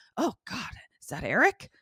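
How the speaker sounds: muttered under the breath, high. Retelling what someone said after bumping into something: imitating muttering under breath. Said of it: "And under her breath".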